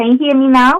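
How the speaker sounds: pushed-up speaking voice.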